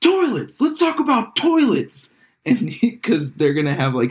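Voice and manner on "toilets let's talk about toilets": shrill scream with swooping pitch. Retelling a press conference: imitating Steve Ballmer screaming. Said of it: "Steve Ballmer just screams".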